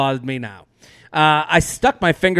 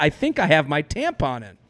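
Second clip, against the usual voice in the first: ordinary delivery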